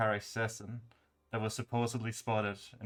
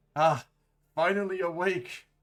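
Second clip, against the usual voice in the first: put-on raised, high-pitched old man voice; 7 semitones higher, 5 dB louder than usual. Voicing an old man greeting a waking player: old man voice. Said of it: "you hear the voice of an old man".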